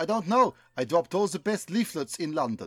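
put-on heavy, thick, full German accent. Acting a scene as the Führer, talking to Goebbels, in a full German accent. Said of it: "I want full accent action".

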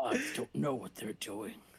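low, swooping anime villain voice. Repeating the other speaker's line back in a playful bit, anime villain voice. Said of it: "That's my villain voice".

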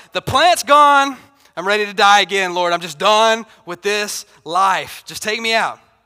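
loud, angry bellow, sounding fed up. Retelling the Jonah story, voicing Jonah after the plant dies: imitating Jonah. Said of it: "He's like".

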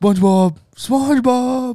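loud, high-pitched cartoon character voice. Told to do their best impression, the speaker calls for SpongeBob, Patrick impression. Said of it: "Do your best Patrick impression".

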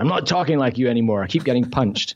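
ordinary talk

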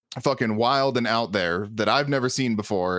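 ordinary talk

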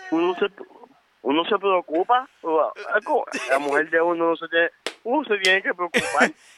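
high, tearful voice talking through sobs. Saying one has to worry about one's woman: crying while talking. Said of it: "¿tú estás llorando?".

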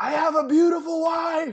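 play-acted very high, all-out yell from the lungs. Retelling how Joey's brother yelled after waking up: imitating Billy yelling at the top of his lungs. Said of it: "he yelled at the, at the top of the lungs".

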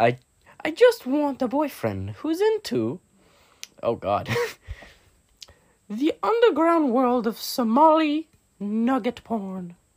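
very high, weird, swooping, silly put-on voice. Resuming after others comment on the voice, continuing a put-on voice. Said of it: "let me continue with the damn voice".

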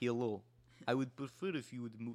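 put-on thick Russian or Czech accent. Retelling what a man on the seat said: imitating thick russian or czech accent. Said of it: "had a thick, thick, like, Russian or, like, Czechoslovakian accent".

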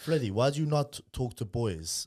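put-on Greek accent. Retelling what the boss always said to Freddy, in a Greek accent. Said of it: "He's saying in a Greek accent".

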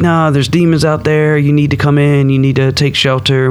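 normal talking voice

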